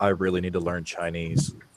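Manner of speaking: very soft, quiet, low mutter under the breath. A game player voices his character's aside, muttering under his breath. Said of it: "Bellic mutters under his breath".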